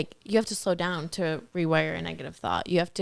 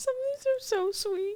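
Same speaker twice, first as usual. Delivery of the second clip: crying through the words, tearful, very high; 3 dB quieter than usual. Going over answers to the season's question, the speaker is tearful. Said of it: "Are you crying?".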